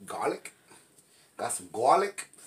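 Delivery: New Jersey accent on the word garlic. Listing seasonings, speaker asks for garlic in a put-on new jersey accent. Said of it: "Sound like I'm from Jersey".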